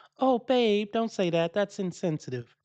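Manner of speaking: soft, sweet, feminine voice. Illustrating how a demure woman might reply, in a soft, sweet, feminine way. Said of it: "in a feminine, cool, soft, sweet, demure way".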